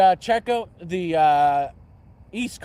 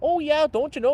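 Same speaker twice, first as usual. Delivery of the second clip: put-on Wisconsin accent, pitched very high; 10 semitones higher than usual. Joking about regional accents in conversation: Wisconsin accent. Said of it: "the Wisconsin accent".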